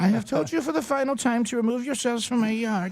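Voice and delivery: high, put-on grandmother voice with German accent. Playing a grandmother who speaks like a German: German-accented grandmother voice. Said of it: "If your grandmother speaks like a German".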